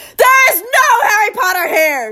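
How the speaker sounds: very high, drawn-out roaring shout. Narrator reads the uncle shouting into the phone receiver at a caller, Uncle Vernon roaring. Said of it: "he roared".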